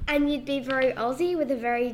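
ordinary delivery

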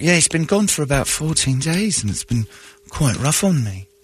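light, mild put-on British accent. Retelling what a coworker said to a colleague: imitating a British accent. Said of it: "with her little British accent".

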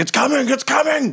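very high, frantic, panicked shouting. Voicing people running through a commotion: people yelling to each other. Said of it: "people running and yelling to each other".

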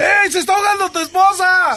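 high-pitched shout. Telling a joke, showing how a man shouts to another man, shouting. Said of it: "¿cómo grita el señor?".

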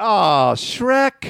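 mock very high, crestfallen disappointment. Retelling what a stranger at a urinal said, imitating a bummed guy. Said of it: "he was so bummed".

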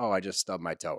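put-on nonchalant, offhand tone. Comparing the reveal to a casual remark: imitating a nonchalant tone. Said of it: "She says it in a way that's so nonchalant".

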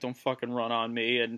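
low mutter under the breath. Describing a player throwing a runner out from the outfield, acting out a mutter under breath. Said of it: "you just get that like mutter under his breath".

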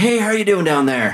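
high, breezy goat voice, calling.

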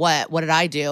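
ordinary talk, nothing marked

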